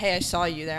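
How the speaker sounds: normal talking voice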